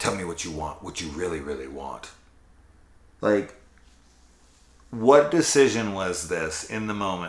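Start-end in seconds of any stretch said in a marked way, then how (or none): 0.0-2.1 low, hushed, put-on villainous sinister menace. Retelling a man's reply to a woman, in a put-on sinister voice. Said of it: "in trying to be a sinister voice".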